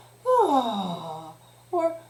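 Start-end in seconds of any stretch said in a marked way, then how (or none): 0.2-1.3 big, loud sighing ah. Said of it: "So you could do a big sigh like".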